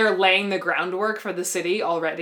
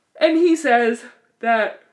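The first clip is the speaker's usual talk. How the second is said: loud speech spoken through a yawn; 4 semitones higher, 6 dB louder than usual. Recapping a boring TV episode, yawning while speaking. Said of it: "I'm yawning".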